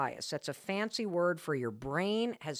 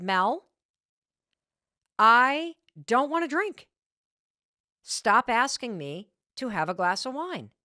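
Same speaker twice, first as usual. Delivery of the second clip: slow, deliberate, raised, fed-up, frustrated insistence; 5 semitones higher, 7 dB louder than usual. Retelling a man turning down wine the speaker kept offering, imitating his frustrated reply. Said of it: "He looks at me very frustrated".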